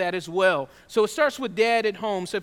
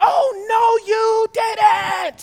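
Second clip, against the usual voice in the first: very high, very slow, drawn-out scream; 12 semitones higher, 8 dB louder than usual. Retelling how a mother reacted from the stands: imitating mom screaming. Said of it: "started screaming".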